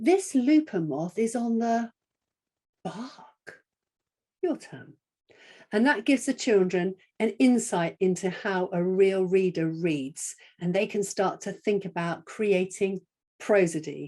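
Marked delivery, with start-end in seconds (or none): 2.8-3.6 the word "bark" lifted with surprised stress. Modelling reading aloud for children, showing surprise on the word bark. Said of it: "I'm going to show surprise on that word bark".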